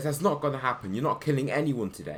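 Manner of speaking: usual speaking voice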